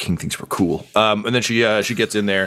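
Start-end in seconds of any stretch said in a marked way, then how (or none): 0.0-0.9 muttering under breath, faster. Game master voices a character muttering to herself as she goes in. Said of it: "You just hear her mutter to herself".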